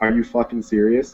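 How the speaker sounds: muttered under breath. Retelling his reaction after a teammate died in a game, mumbled under breath. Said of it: "I just mumbled under my breath".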